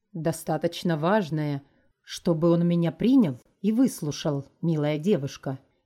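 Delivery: plain reading voice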